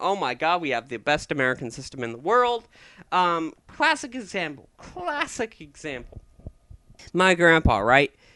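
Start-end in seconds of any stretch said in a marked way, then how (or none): 0.0-2.7 fast, rushed, defensive insistence. Acting out how people react when you joke about American education: mock-defensive. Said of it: "they'll get all defensive on you".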